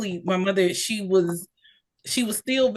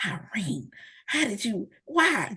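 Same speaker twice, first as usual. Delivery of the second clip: very slow, hushed, drawn-out half-whisper; 3 semitones higher, 5 dB quieter than usual. Retelling a phone call where the mother half-whispers: imitating mother half-whispering. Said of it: "she is whispering in the phone to me".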